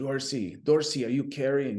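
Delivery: put-on French accent that doesn't land. Retelling a buddy calling to him while in staging, attempted French accent. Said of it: "That wasn't a French accent, but I tried".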